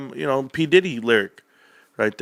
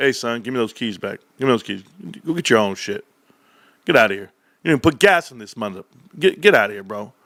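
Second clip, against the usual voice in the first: put-on, angry, fed-up father voice; 4 semitones lower than usual. Acting out America as a dad reclaiming his car keys: playing an angry dad. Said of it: "America's the dad walking over and say".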